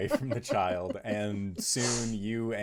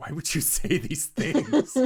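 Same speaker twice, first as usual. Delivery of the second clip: higher, louder, exasperated voice. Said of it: "gives you this exasperated look, like".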